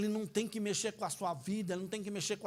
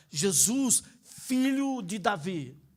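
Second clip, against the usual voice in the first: usual speaking voice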